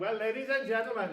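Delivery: terrible put-on Welsh accent. Retelling Terry's address to the crowd, in a terrible Welsh accent as Terry. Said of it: "it's a terrible Welsh accent".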